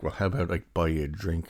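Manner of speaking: ordinary talk, nothing marked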